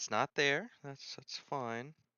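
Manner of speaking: sounding nervous. Searching for something and not finding it, the speaker reacts: nervous voice. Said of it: "I just heard the nervousness in your voice".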